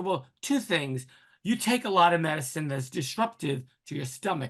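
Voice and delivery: ordinary talk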